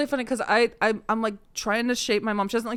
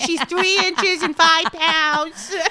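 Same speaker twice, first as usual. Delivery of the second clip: put-on childhood accent, childlike, higher and louder; 7 semitones higher, 6 dB louder than usual. Retelling own baby videos when teased for an accent: imitating own childhood accent. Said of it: "there's baby videos of me going like".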